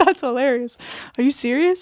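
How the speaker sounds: acted, giggly, loud, laughing incredulous outburst. Retelling hearing the doctor say stage four: imitating own past laughing. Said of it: "I just laughed in his office".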